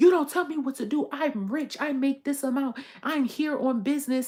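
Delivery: loud, shrill, angry yelling rant. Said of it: "yelling in this expensive ass spa".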